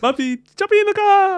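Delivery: very high, loud piping voice. Retelling a film scene for another speaker: imitating Chappie. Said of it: "Quite good".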